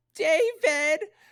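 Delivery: very high, shrill mom voice. Doing an impression of his mom calling his name, imitating her shrill voice. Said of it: "my mom has that very distinct shrill voice".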